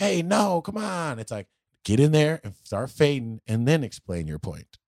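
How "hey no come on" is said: very high, preachy, scolding yell. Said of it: "the moral yelling moments he has".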